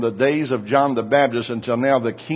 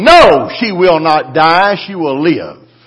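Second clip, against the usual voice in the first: angry, heated voice; 4 semitones higher, 10 dB louder than usual. Retelling his reply to the nurse: retelling an angry reply. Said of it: "I got mad".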